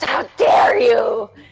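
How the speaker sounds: loud pained hiss. Game master voicing a demon struck by a radiant beam, hissing in pain. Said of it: "it hisses in pain like".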